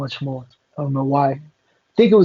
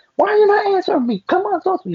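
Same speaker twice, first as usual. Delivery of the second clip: mock, shrill, very high demanding yell. Retelling how someone yelled in another person's face: imitating someone yelling. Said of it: "she's just yelling at her".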